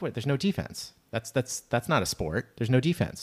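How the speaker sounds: plain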